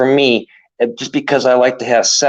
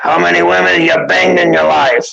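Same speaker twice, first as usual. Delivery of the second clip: raspy, high, creaky courtroom judge voice; 6 semitones higher, 3 dB louder than usual. Retelling a roast panel, imitating the judge questioning him. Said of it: "He's the funniest at impersonations".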